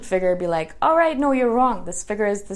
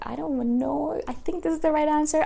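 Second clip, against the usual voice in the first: gentle, soft-spoken, pitched up; 6 semitones higher, 4 dB quieter than usual. Recalling how they used to give answers after raising a hand: soft voice. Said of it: "I would say it in such a soft way".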